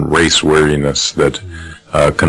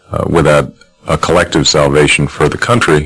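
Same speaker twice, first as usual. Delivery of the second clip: plain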